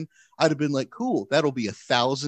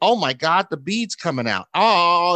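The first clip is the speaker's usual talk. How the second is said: mock frantic cry, loud and drawn out; 4 semitones higher, 5 dB louder than usual. Telling a story about a bead in her nostril, imitating someone freaking out. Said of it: "she's like freaking out".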